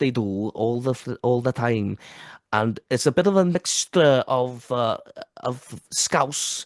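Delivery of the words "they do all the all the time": Welsh accent, northern. Describing how people in North Wales talk, in a North Wales accent. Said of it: "they talk like this".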